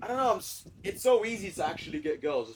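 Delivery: ordinary talk, nothing marked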